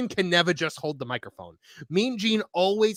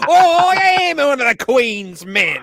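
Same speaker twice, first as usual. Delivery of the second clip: thick put-on Cockney accent, higher and louder; 6 semitones higher, 10 dB louder than usual. Playing a threatening wrestler, after another speaker suggests it: thick Cockney accent. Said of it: "some guy with a real thick Cockney accent".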